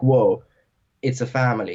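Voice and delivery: ordinary delivery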